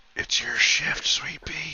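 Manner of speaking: breathy, barely voiced, soft close whisper. Voicing a character waking a tentmate for watch: whispering. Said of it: "He just whispers".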